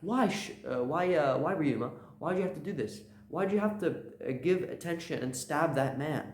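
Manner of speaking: mock angry, stumbling, demanding tone. Speaker retells a woman in a story yelling at Ryuma, retelling an angry shout. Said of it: "mad at him and just starts shouting at him".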